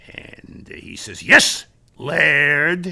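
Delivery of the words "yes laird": put-on sarcastic tone. Recounting calling Tom Carnegie, who answers; mock-sarcastic Tom Carnegie reply. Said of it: "I can taste the sarcasm there".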